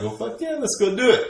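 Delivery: high, eager yelp of excitement.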